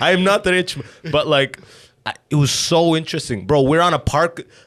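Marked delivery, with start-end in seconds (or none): 0.0-0.9 put-on just a hint of Caribbean accent. Retelling what a dealer's friend said on a bench: slight caribbean accent. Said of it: "I'm doing a little bit of a Caribbean accent".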